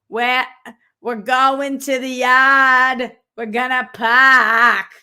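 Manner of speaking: put-on Boston accent. Mimicking boston people who worked on a production, in a mocking fake boston accent. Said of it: "they're like".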